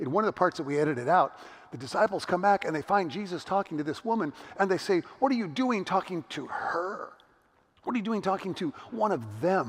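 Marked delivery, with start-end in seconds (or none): 5.2-9.7 contemptuous sneer with heavy stress on "them". Quoting the disciples questioning Jesus: imitating a sneer, stressing THEM. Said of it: "Say it with a sneer".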